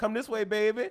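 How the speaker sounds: thick New Orleans accent, laid on, put-on. Retelling what a woman in the TSA line said: imitating a heavy New Orleans accent. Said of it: "New Orleans got the heavy accent".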